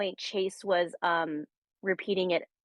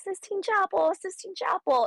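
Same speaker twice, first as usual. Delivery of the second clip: very high, excited, shrieking yell; 13 semitones higher, 3 dB louder than usual. Recalling solving a word puzzle, retelling yelling at the phone. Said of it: "I literally kept yelling at my phone".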